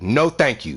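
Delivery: curt, stern, aggressive delivery. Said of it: "I come off aggressive from the top".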